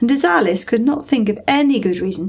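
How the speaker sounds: ordinary delivery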